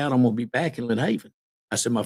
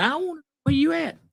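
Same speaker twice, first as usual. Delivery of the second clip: high-pitched screamed words. Retelling a phone call with a special agent, imitating someone screaming. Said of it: "and he's just screaming".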